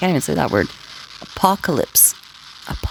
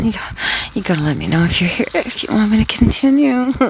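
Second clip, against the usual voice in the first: acted, high, seductive, come-hither put-on voice; 7 semitones higher than usual. Retelling how he pretended on air to his audience, in a put-on horny, soft voice. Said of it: "I said in a real horny, soft voice".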